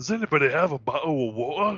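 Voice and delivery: put-on fake British accent. Retrying a british voice after laughing through it, the speaker uses a put-on british accent. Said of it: "I'm British today".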